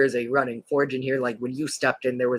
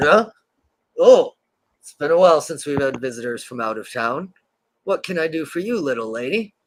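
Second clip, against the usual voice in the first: rough, gruff voice; 3 semitones higher, 5 dB louder than usual. As Peg walks in and the door bell rings, greeting her from behind in a gruff voice. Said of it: "you hear a gruff from behind".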